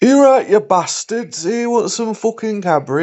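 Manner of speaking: fake Manchester accent, very high pitch. Speaker imagines a shop worker offering Cadbury, in a mock Manchester accent. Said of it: "I've just offended everyone from Manchester".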